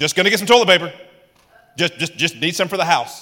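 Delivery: put-on puffed-up big announcer-style voice. Speaker acts out his past self going in, with the big voice. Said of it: "So I went in with the big voice".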